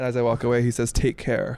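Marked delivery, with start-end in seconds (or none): none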